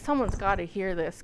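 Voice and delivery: normal talking voice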